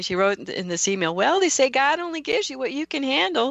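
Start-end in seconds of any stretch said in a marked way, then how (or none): 1.1-3.5 put-on Southern drawl, higher in pitch. Quoting a cousin's email aloud: imitating a Southern drawl. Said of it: "I could just hear her Southern drawl".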